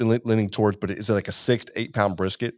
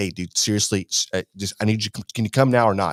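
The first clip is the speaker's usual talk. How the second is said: mock-frantic, urgent pleading. Retelling calling a friend in the middle of the night, retelling frantic urging. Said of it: "I was real frantic".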